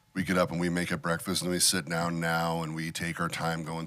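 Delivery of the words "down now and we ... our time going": ordinary talk, nothing marked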